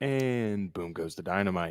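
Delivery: mock slow, flat monotone with no inflection. Imitating the kid's famous line: imitating a flat, uninflected delivery. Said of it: "no inflection whatsoever".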